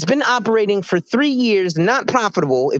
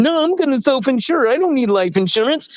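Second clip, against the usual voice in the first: mock self-satisfied, smug, know-it-all, sarcastic tone; 4 semitones higher than usual. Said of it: "I'm gonna think I sound good and say".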